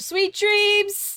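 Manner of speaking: high, very loud yelling call. Playing a character who yells out the front door: yelling out the door. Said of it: "yells out the front door".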